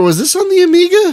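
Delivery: very high voice, cracking and breaking upward. Recalling an old game, the speaker asks about the Amiga, voice cracking up high. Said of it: "Why did my voice go up like that?".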